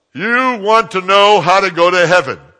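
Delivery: very loud, high-pitched blurted delivery. Retelling a question put to a man sitting across the aisle, said very loud. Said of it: "I said it real loud".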